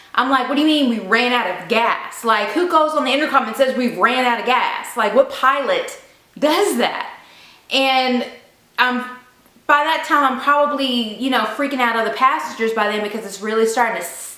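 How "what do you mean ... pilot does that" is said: ordinary talk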